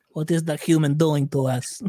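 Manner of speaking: rough, best-guess put-on Kazakh accent. Voicing aliens reacting to Superman, in a Borat-like accent. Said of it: "whatever the fuck that accent was".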